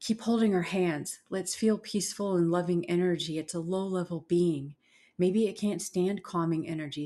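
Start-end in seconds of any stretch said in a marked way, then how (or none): none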